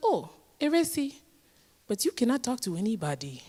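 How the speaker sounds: put-on West African accented speech. Retelling a talk with mother: imitating mom's West African accent. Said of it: "my mom has a wonderful accent".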